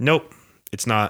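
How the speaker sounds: put-on blunt, deadpan, no-fuss delivery. Retelling a surgeon's answer about the bleeding: imitating a deadpan reply.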